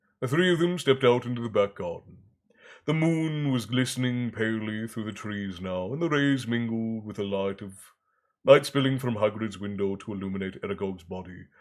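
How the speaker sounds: ordinary delivery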